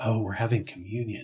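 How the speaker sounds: solemn, barely audible, hushed half-whisper. Retelling how people at church spoke of communion: imitating a half-whisper. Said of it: "kind of in a whispered tone".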